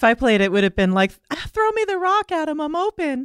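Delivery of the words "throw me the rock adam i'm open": very high-pitched, very slow, drawn-out put-on voice. Imagining himself playing in a game, in a put-on altered voice. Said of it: "why are you changing your own voice to do your own impression?".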